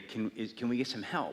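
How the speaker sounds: ordinary talk, nothing marked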